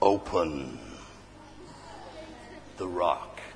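hushed, whispered divine voice. Acting out God speaking to the angel in the Easter story: godly voice. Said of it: "With the sort of godly voice".

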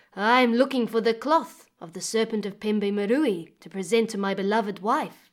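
ordinary delivery, nothing marked

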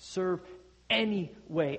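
'any' strongly stressed, 'way' not stressed. Explaining the phrase serve any way, stress on 'any'. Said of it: "emphasizing the word any".

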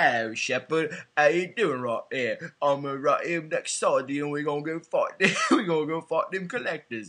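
put-on slurred drunk Australian voice.

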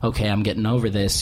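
ordinary delivery

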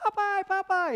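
very high cartoon damsel cry. Retelling a cartoon kidnapping scene, doing an Olive Oyl impression. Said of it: "That's my best Olive Oil impressionation".

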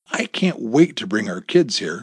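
ordinary delivery, nothing marked

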